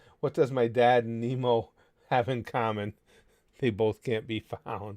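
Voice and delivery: normal talking voice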